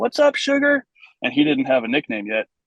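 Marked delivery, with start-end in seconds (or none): 0.0-0.8 raised yell. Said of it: "I yell across the field".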